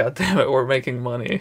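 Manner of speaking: ordinary talk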